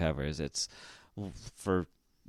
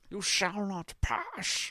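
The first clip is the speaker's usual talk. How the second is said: very high, slow, drawn-out wizard voice. Quoting a favorite line in a wizard's voice: Gandalf voice. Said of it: "that's not a good impression".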